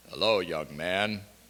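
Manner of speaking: very deep, bass-heavy voice, pitched very low. Recalling a dinner guest greeting the speaker as a boy, imitating Melashenko's deep voice. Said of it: "he had a deep voice".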